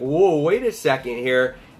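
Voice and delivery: ordinary delivery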